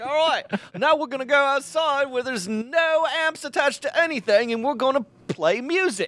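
put-on Australian accent, pitched high. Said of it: "I'm pretty impressed with that accent that I just did".

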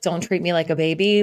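ordinary delivery

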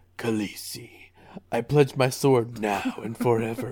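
very low, deep caped-hero vigilante voice. Asked for a Jorah line, the speaker delivers it in a little-Batman voice. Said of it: "It's a little Batman".

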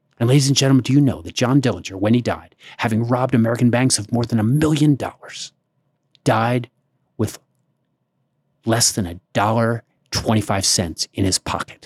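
put-on, mock-breathless tour-guide voice. Retelling what a tour guide said to the bus passengers, imitating a breathless tour guide. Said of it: "breathless tour guide, voice".

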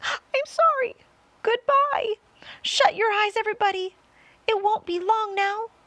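very high, loud, desperate, despairing crying out. Narrator voicing James as the peach falls, crying out to everybody. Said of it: "cried James".

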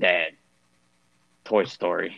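serious, exasperated voice. Retelling a fed-up two-year-old asking dad for a film: imitating a serious, fed-up tone. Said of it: "she gets this serious tone".

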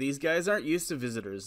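plain

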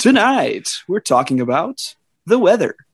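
put-on radio announcer voice. Showing the radio voice you have to get: radio voice. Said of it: "you got to get that radio voice. Like".

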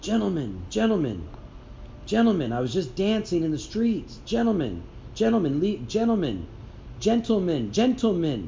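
acted, high-pitched shouting, repeated over and over. Retelling a video of a man shouting to police: imitating Mali yelling. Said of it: "this is what I hear Mali yelling saying to the cops".

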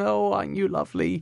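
put-on very high, lilting, sing-song baby talk. Showing how people talk to babies, sing-song baby-talk voice. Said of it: "It's very sing-song".

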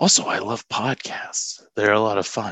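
slightly creepy tone of voice. New co-host ending their podcast introduction, a little creepy voice. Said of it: "your voice got a little creepy at the end there".

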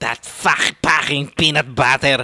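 put-on middle-class Filipino English social accent. Imitating how a caller from the last episode said it, in filipino english accent. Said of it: "I love that accent".

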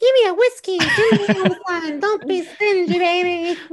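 loud, shrill, very high voice, drawn out slowly. Imagining Greta Garbo's first talking-film line: high-pitched Greta Garbo voice. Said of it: "a high-pitched voice instead of that deep voice".

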